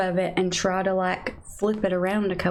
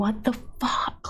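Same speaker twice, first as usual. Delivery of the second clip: frustrated, angry exclaiming outburst, held in; 2 semitones higher than usual. Retelling a panicked moment at home, imitating own screaming. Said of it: "I was screaming".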